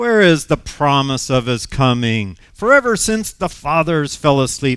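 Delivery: play-acted, loud, scornful, mocking scoffing taunt. Reading scripture aloud, voicing what the scoffers will say, in a scoffer voice. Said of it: "That's my scoffer voice".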